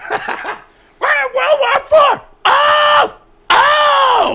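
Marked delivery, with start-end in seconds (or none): 1.0-4.4 very high, loud, slow anguished scream, comic ranting. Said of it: "Sam Kinison doing an Alex Jones impersonation".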